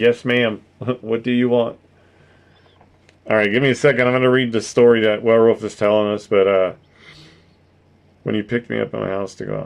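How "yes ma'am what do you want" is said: put-on eager, obedient, keen-to-please tone, like a puppy. Imagining answering her call like a puppy: pretending to be an eager puppy. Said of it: "I'd be like a puppy coming to its, you know, owner".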